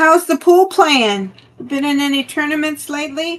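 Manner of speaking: loud, high shouting yell. Calling out a question to someone while busy with something else, yelling. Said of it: "Sorry, I'm yelling".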